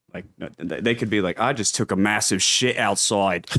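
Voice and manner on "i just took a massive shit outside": thick put-on Australian accent throughout. Demonstrating what an Australian might say, Australian accent. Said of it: "definitely more Australian".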